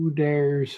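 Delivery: talking like a robot. Reading a script aloud and voicing the robot's line, in a robot voice. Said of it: "talks like a robot".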